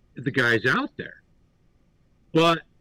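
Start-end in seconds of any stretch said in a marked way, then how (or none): none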